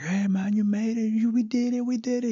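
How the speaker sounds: mock thrilled coach, very high-pitched, excited. The speaker quotes a former coach who drove to the house, imitating an excited coach. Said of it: "he was all excited".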